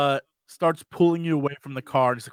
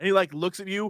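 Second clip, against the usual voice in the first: ordinary talk, nothing marked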